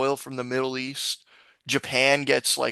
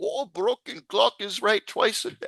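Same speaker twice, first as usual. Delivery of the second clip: bad put-on Swedish accent, pitched higher; 7 semitones higher than usual. Imitating what Greta Thunberg might say in a bad Swedish accent. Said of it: "I can't do a Swedish accent".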